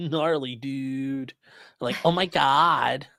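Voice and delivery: bad put-on California valley accent, long "god". Speaker admits their california accent isn't great, then tries it: bad california accent. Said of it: "My C my California accent isn't great".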